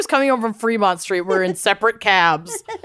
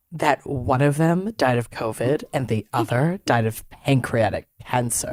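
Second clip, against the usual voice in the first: put-on hushed, excited voice, lower and quieter; 11 semitones lower, 4 dB quieter than usual. Retelling a friend's creepy cab-ride fact: imitating Lucy's lowered sinister voice. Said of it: "she lowers her voice intentionally".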